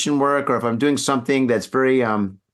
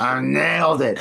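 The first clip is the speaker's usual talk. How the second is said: mock slurred, drunk-sounding speech. Retelling finishing a painting after shots, imitating own drunk slurring. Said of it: "slurring my words and shit".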